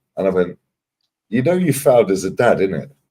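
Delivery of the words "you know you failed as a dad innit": cheeky, teasing, joking tone, pitched up. Retelling teasing a dad on a sun lounger: retelling a joking jab. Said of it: "I said it in a joking way".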